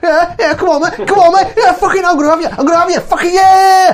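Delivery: loud, very high, chest-out, macho bravado taunting. Acting out a character squaring up to fight in a roleplay: aggressive bravado taunting. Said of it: "I start big bravado kind of body movements".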